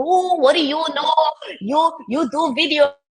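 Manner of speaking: put-on Greek accent. A daughter acts out her dad's reply to her feedback, Greek accent. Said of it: "he's got a Greek accent".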